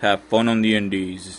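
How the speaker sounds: very low, quiet, lifeless deadpan monotone drone. Mocking the other speaker's flat delivery of the line, in a mocking monotone. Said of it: "You're all".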